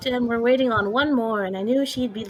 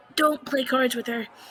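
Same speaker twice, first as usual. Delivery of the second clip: loud theatrical whisper; 2 semitones higher than usual. Warning everyone behind a hand, in character, not to play cards: stage whisper. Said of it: "stage whisper to everyone".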